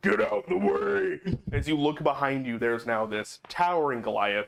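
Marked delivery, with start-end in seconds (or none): 0.0-1.3 huge, booming, resounding giant voice, rough, very slow. Narrator describing a towering Goliath shouting behind the player, booming voice. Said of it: "you hear this booming voice behind you".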